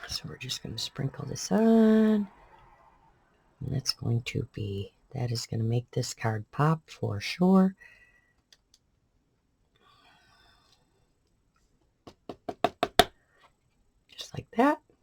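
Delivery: speaking low, little voice left. Working on a card after little sleep, talking low, little voice left. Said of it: "I'm talking kinda low 'cause I really don't have a lot of a voice left".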